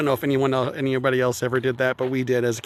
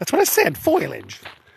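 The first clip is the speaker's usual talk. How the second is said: bad, high, raspy, croaky cartoon mom voice; 5 semitones higher than usual. On a walk, speaker gives Marge Simpson's reply to Lisa: bad Marge Simpson impression. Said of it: "my very bad Marge Simpson impression".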